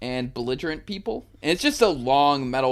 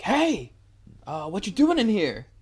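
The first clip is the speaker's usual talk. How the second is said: mock high, raised, called-out yell; 8 semitones higher than usual. Retelling opening a locked bathroom door: imitating own yell. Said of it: "I just yell".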